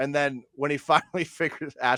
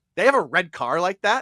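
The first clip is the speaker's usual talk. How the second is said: mock annoyed and fed up, irritated; 6 semitones higher, 6 dB louder than usual. Retelling a scene with Leo, quoting his line, mock-irritated. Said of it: "Like he's just irritated".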